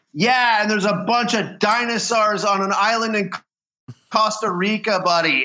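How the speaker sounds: high-pitched, called-out voice. Retelling a quip shouted back in a movie theater: retelling own shout. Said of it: "I just shouted out".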